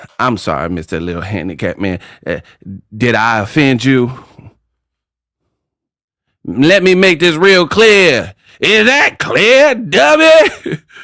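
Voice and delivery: swooping, taunting rant with long drawn-out "dummy". Retelling a scene from Major Payne: Damon Wayans as Major Payne. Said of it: "Damon Wayans was tripping. He's like".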